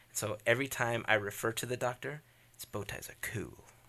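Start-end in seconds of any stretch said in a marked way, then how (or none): 2.6-3.7 bad British accent in a breathy whisper. Quoting the Doctor's catchphrase: terrible British accent. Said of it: "that's a terrible British accent".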